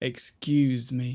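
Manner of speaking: excuse with stress on the -cuse syllable. Explaining where excuse me is stressed: stress on "-cuse" in excuse. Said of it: "the emphasis here is always on the ooze".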